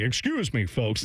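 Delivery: testy, irritated broadcaster voice. Imagining a broadcaster interrupted courtside: imitating Paul Keels getting testy. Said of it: "I think you would hear him like".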